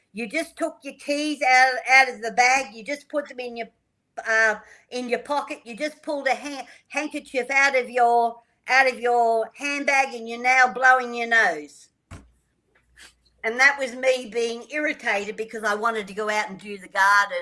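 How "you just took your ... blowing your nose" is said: put-on full-voice yell, higher pitch. Retelling calling out what someone was doing through the walls, retelling a yell. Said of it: "I just yelled out at the top of my voice".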